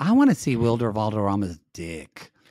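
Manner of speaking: gross, creepy, predatory-sounding tone. Talking with another speaker about a celebrity: predatory-sounding. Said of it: "That sounded really, really gross. Like predatory".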